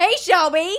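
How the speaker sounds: very loud, high-pitched delivery. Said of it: "very loudly say".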